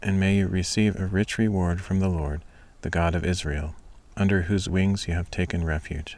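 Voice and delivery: ordinary delivery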